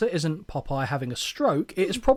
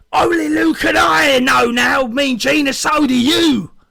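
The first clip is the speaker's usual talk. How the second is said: louder, high, slow roaring shout, wrestler style. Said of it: "That one's a bit louder".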